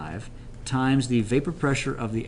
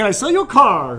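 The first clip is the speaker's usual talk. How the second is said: radio announcer voice, higher and louder; 10 semitones higher, 11 dB louder than usual. Explaining colligative properties, then showing off a radio voice. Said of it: "I've got the radio voice".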